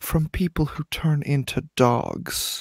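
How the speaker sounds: quiet secretive voice. Speaker in a car explaining their game character's lore, lowered voice. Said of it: "I'm gonna lower my voice".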